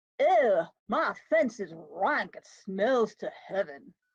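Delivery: playful, fun, made-up put-on dialect voice. Performer delivers a monologue to the other players, in a fun put-on dialect. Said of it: "What's this uh fun dialect you got going on?".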